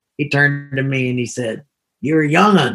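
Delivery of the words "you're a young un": put-on Texas accent on "young un". Retelling what an old pastor said in the car: imitating a Texas accent. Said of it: "Kinda had a Texas accent".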